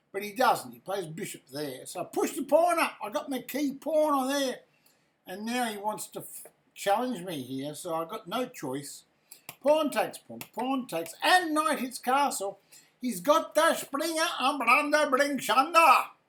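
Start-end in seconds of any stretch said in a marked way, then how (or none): 13.1-16.1 fake Indian accent, higher and louder. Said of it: "How's my Indian accent?".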